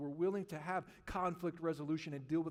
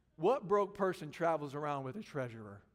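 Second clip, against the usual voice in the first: normal talking voice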